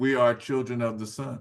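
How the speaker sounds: ordinary talk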